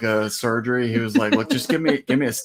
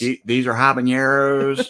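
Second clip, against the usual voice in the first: put-on twangy voice. Retelling what a pepper-video maker said, in Jake voice. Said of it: "Is that your Jake voice?".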